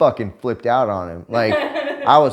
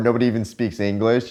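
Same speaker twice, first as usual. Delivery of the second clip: ordinary talk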